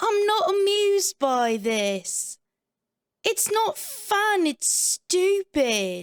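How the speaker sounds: slow, high-pitched, attempted English accent. Reenacting Vanessa and Wendy's laundry room argument, speak Vanessa's part in an attempt at Vanessa's accent. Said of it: "my attempt at Vanessa's accent".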